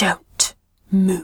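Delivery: hushed whispering voice. Voicing a figure behind a player with a blade, whispering. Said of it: "behind you whispers".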